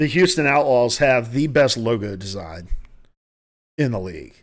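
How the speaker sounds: decisive, definitive tone. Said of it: "I will say definitively".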